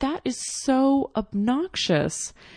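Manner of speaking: flustered, worked-up outburst. Retelling own words to a store clerk over payment: retelling a flustered outburst. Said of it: "I'm really flustered".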